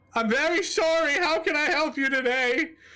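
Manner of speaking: very high-pitched voice, on the verge of crying. Told to speak with his chest, [name] apologizes again, [name] near tears. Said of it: "borderline crying".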